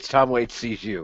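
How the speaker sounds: ordinary talk, nothing marked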